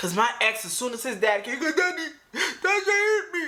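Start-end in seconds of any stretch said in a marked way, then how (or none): 1.7-3.5 mock little-girl crying, higher pitch. Retelling what the ex said when his dad came: imitating someone crying. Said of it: "crying like a little girl".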